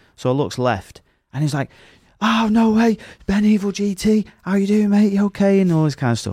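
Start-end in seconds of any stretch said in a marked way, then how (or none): 2.2-5.6 acted, shrill, very high, drawn-out thrilled holler. Retelling a driver calling through a car window: imitating someone shouting excitedly. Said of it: "fucking shouting".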